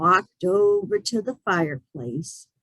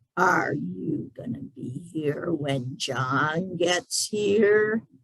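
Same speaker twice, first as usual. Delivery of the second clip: slow deep gravelly creature drawl, "John" stretched; 2 semitones lower, 4 dB quieter than usual. Narrator reads the creature's question to the man, slow, deep, gravelly voice. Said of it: "in a slow, deep, gravelly voice".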